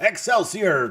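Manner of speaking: loud, booming, full showman exclamation. Opening an episode intro done in the voice of Stan Lee. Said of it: "this is done in the voice of Stan Lee, so I'll I'll try to do, I'll do my best".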